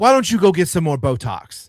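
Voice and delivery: loud shout, pitched high. Retelling a parent yelling an insult at a teacher: imitating someone yelling. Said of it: "starts yelling at the teachers".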